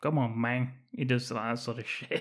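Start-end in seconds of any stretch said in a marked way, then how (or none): 0.0-0.7 put-on movie drug-lord gangster kingpin voice. Retelling a film scene, quoting a cartel character: Tony Montana impression. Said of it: "He's doing a Tony Montana impression".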